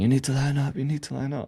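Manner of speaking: put-on high, pushy, insistent shout, said twice. Retelling a guy at the airport queue shouting at them: imitating someone shouting. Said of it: "shouting at me".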